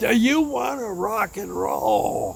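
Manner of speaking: put-on top-of-lungs yell. Retelling a woman at the mic calling out to the crowd, at the top of her lungs. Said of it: "at the top of her lungs".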